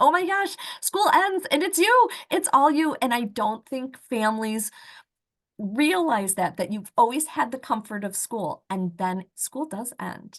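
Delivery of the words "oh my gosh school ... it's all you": panicked screaming, higher and louder. Retelling the urge felt when a son aged out of school: imitating own panicked screaming. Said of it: "wanted to run up and down the hall screaming".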